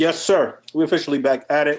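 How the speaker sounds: talking through a mouthful, chewing between words. Podcast host kicks off the episode, talking with a mouth full of food. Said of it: "I got a mouthful of food".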